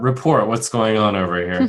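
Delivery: commanding, authoritative, in-charge tone. A tabletop player speaks in character, authoritative voice. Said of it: "I say in a kind of an authoritative voice".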